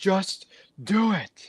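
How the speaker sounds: shrill, pitched-way-up, pushed-out high voice. Quoting a famous line to agree with the other speaker: Shia LaBeouf impression. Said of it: "Shia LaBeouf's".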